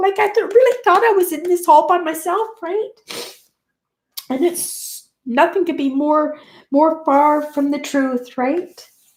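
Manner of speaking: crying through the words. Speaking about the niece who has been a great help, crying. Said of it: "I'm not crying because I'm sad. I'm crying".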